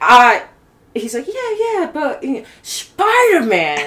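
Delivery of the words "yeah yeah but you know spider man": put-on very high, slow, wandering New York accent. You act out Tom answering that he is about thirty, in a Peter Parker accent, all over the place. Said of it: "this accent's all over".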